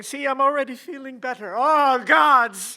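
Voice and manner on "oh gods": groaning in pain. Acting a sick man as his pain strikes: groaning in pain. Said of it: "Why are you groaning to the gods?".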